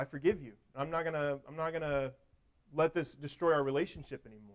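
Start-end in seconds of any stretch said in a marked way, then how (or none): none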